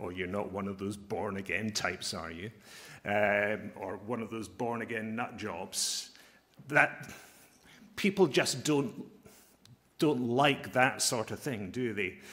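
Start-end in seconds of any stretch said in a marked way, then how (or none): 0.0-2.5 low, soft mutter under the breath. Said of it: "mutter under their breath".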